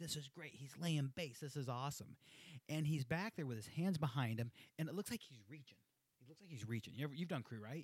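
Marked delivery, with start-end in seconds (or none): none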